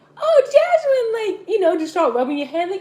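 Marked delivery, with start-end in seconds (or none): 0.2-1.4 very high, loud yell. Speaker retells spitting toothpaste on their sibling's head, imitating the sibling yelling. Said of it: "you start yelling like".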